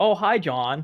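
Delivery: put-on American accent. Speaker imitates his fiancée's mum greeting him, in a put-on american accent. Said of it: "that's what she sounds like".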